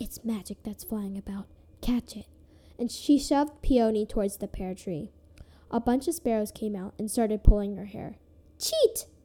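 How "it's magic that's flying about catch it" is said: whispered, quieter than before. The stepmother turns and speaks privately to the girl beside her: whispered. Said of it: "Then she whispered to Peony".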